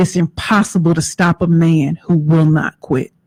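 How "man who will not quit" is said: normal talking voice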